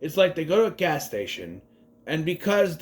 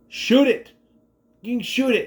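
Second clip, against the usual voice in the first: put-on, loud, shrill hollering yell; 7 semitones higher, 5 dB louder than usual. Recalling watching a creature scene on tv: retelling yelling at the tv. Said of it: "I'm yelling at the T V".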